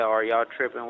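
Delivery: plain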